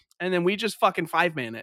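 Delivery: plain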